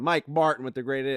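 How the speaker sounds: ordinary talk, nothing marked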